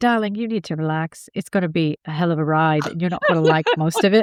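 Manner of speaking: put-on British accent in a guide voice. Imitating a guide who tells the speaker to relax: british accent. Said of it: "he has a British accent".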